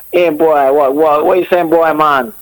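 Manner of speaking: put-on Jamaican accent throughout, pitched high. Speaker riffing after a partner suggests 'a Jamaican', doing a Jamaican accent impression.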